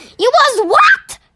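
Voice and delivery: very high, startled, surprised outcry. The BFG answers Sophie after she says she was in his mouth; crying out. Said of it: "Cried the BFG".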